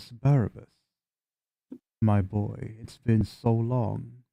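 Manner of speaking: low voice, held down. Game narrator voices a thing speaking inside the listener's brain, in a low voice. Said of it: "it just says in a in a low voice".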